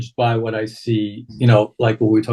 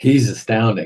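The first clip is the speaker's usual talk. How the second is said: ordinary delivery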